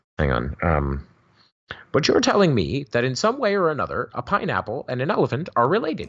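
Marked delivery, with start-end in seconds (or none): 1.9-6.1 animated delivery with high, wide, swooping pitch. Speaker tries the best version he can manage: Kent Hovind impression. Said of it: "the best Ken Hovind I can do".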